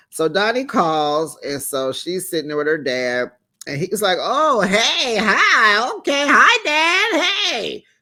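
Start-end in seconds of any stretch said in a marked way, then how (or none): 4.2-7.8 put-on chirpy, perky voice, very high, very slow. Retelling a call to her father, imitating Donnie's fake perky voice. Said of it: "Voice picked up, he all perky, acted all fake".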